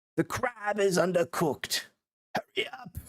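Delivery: bad, off-the-mark put-on English accent. Doing a Gordon Ramsay bit: bad English accent. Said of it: "My English accent is not on point".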